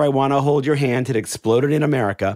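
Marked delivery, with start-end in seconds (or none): none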